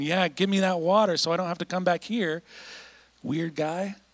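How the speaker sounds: mock offhand, dismissive brush-off. Retelling a scripture passage, voicing the woman answering Jesus in a mock-dismissive tone. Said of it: "you can almost hear in the text like a dismissive tone".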